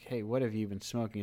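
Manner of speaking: usual speaking voice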